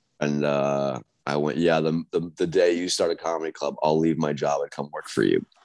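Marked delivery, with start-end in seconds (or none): none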